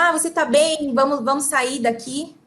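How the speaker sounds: usual speaking voice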